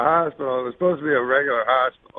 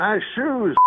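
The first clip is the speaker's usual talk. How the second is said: acted-out, pitched-up jeering yell; 7 semitones higher than usual. Retelling how a heckler yelled at the speaker walking to the stage: imitating a heckler yelling. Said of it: "a guy yells out".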